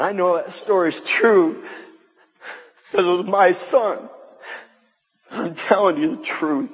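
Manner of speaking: tearful weeping throughout the words. Telling a true story about their son, crying while speaking. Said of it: "I didn't mean to be crying".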